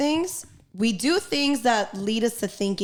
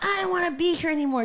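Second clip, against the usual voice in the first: put-on ten-year-old girl voice, high, upset yelling; 8 semitones higher than usual. Retelling a ten-year-old girl's outburst at her mom: imitating a girl yelling. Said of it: "She's yelling at her mom".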